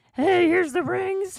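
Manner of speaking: terrible puppet voice, very high, squeaky and slow. Joking about a wedding, handing over the rings: terrible Kermit voice. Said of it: "We're terrible Kermits".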